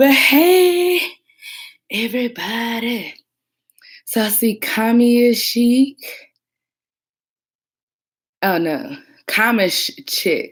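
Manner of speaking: out of breath. Greeting everybody right after running up the stairs, out of breath. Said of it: "Gotta catch my breath".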